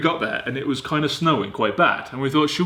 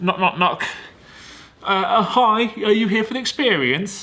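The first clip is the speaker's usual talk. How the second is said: high, hesitant, stumbling nerdy guy voice; 7 semitones higher than usual. Retelling a trip, imitating the nerdy guy at the window. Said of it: "That's my impression of the guy".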